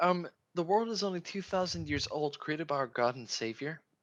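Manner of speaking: snide, high-pitched, mocking put-on character voice. Voicing a character's line as she speaks: mocking voice of a character. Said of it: "She's like".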